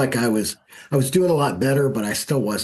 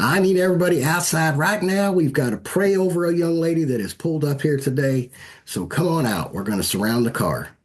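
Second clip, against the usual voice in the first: put-on higher-pitched southern lady's accent; 6 semitones higher than usual. Retelling what the lady running the thing told everyone waiting inside, southern accent. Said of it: "she goes in her southern accent".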